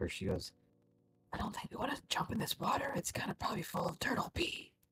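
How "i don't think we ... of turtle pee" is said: whisper, much higher pitch. Acting out what she says in an imagined scene: whispering. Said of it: "She kind of like whispers".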